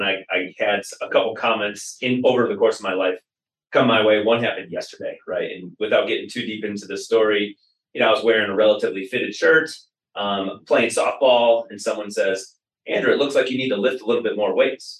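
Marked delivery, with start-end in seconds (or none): 12.9-15.0 put-on teasing, sarcastic jab. Retelling someone's remark while playing softball: imitating a sarcastic remark. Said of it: "they're being sarcastic".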